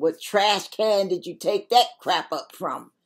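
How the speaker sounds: snide, mocking sarcasm. Showing how polite words hide private thoughts, the speaker voices the thought with snide sarcasm. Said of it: "You got all this little sarcasm going on".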